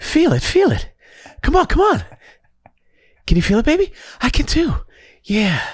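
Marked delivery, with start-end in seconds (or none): 0.0-4.7 put-on desperate whispered celebrity voice. During a back-and-forth bit, the speaker does a mock-desperate Mark Wahlberg whisper. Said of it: "a desperation and a whisper with Mark Wahlberg".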